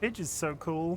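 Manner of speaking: unintentionally sarcastic-sounding. Speaker reacting to a chatter's news, sounding sarcastic. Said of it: "It sounds sarcastic when I say it that way".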